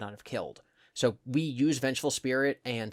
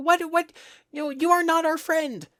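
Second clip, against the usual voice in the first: put-on squeaky child voice, very high and loud; 8 dB louder than usual. Describing how Fredbear speaks, doing the squeaky child voice. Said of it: "It's a very like squeaky child".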